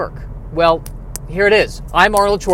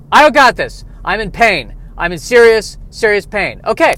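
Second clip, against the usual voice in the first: normal talking voice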